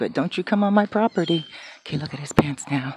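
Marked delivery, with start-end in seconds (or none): none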